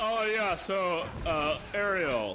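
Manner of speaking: very slow, drawn-out, possessed-sounding alien voice.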